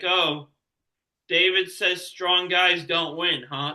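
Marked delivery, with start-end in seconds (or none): none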